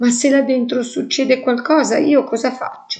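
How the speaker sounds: quavering, unsteady voice. In a story, Rick answers Amalia in a trembling voice. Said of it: "disse Rick con voce tremolante".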